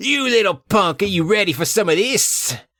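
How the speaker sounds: furious, enraged, high-pitched screaming yell. Voicing an enraged man screaming at a detective: enraged scream. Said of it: "The man becomes enraged and screams".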